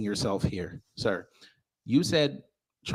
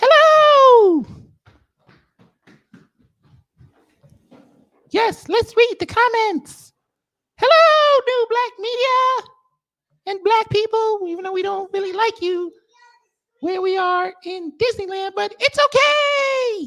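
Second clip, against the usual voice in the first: very high and loud, with "okay" drawn out; 11 dB louder than usual. Bringing up a Mickey Mouse to read the comments: Mickey Mouse voice. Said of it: "It's Mickey!".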